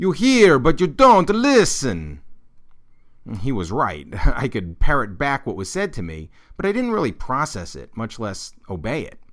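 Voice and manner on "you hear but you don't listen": put-on very loud, slow, distinct Italian accent. Recalling what grandfather often said in grade school, in an Italian accent. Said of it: "in a distinctly Italian accent".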